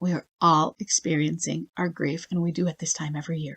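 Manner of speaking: tender, soft, gentle softened voice. Re-enacting their own past words to him, in a soft voice. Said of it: "Notice how my voice got soft".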